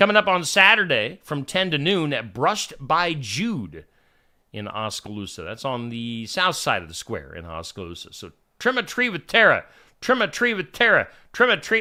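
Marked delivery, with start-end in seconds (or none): 8.6-11.8 rapid, rattled-off speech, pitched up. Attempting a tongue twister repeatedly and quickly: saying it fast. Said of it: "Say that fast three times real quick".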